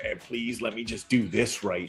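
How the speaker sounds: eerie, weird, off-kilter creepy voice. Retelling a movie scene where a character speaks: imitating a weird creepy voice. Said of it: "you hear him in this weird, creepy voice".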